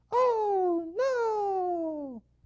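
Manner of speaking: shrill, very loud, high, belted, drawn-out "no". Retelling a toy car ad as Ken looks down: Ken's voice. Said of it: "I always knew Ken had a voice like that".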